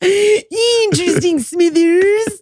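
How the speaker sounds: high cartoon-style voice. Repeating the Mister Burns impression for the others: Mister Burns impression. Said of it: "The Smithers isn't bad".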